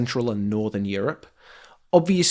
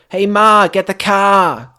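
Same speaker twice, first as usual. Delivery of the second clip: very loud put-on Boston accent, "car" drawn out; 7 semitones higher, 10 dB louder than usual. Trading accent attempts, the speaker tries a Boston accent. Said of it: "I can do like Boston".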